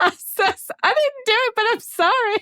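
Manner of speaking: very high, broken-down, tearful crying and pleading. Imagining being questioned by police over a gum wrapper: mock crying. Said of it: "I would break down in tears and be like".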